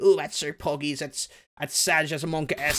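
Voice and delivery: mocking, sarcastic chatter in chat-speak style. Speaker mimics Twitch chat users making fun of people: imitating sarcastic Twitch chatters. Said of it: "that's like being sarcastic about it".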